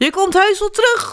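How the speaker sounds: very high-pitched, bellowing, roaring shout. Reading a children's story, the cat calls after the one leaving; roaring. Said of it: "brulde kat".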